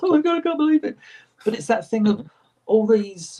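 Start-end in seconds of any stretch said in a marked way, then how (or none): 0.0-1.0 put-on very high, tearful, gushing disbelief. Retelling how fans come up to him crying: imitating a crying fan. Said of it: "people come up to him just crying and going".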